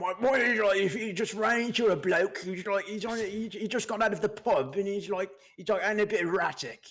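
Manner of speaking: put-on rough unposh British accent. Speaker tries out accents in conversation, using a dirty unposh british accent. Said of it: "You're very good at it".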